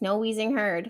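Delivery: ordinary talk, nothing marked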